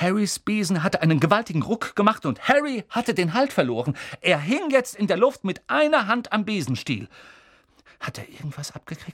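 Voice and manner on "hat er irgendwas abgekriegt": whispered, much quieter. Seamus asks about Harry hanging from his broom, whispered. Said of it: "flüsterte Seamus".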